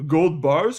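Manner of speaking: questioning lilt, pitch climbing on bars. Questioning a bargain store selling gold, rising pitch on bars. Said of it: "Question mark. Which is why my voice goes up like this".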